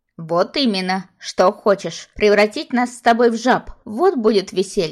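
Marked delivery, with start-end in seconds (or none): none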